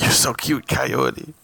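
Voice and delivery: put-on whisper. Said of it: "'Cause he whispers to him".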